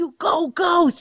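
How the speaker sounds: very high, excited cheering scream. Speaker retells what they screamed on seeing the direwolf Ghost, retelling a scream. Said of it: "and I screamed".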